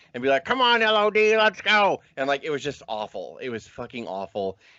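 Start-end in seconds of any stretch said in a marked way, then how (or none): 0.5-2.0 high, loud, slow ventriloquist dummy voice. Retelling a ventriloquist making his dummy cheer on camera: Rocco dummy voice. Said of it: "he would do his ventriloquist shit to not make his lips move".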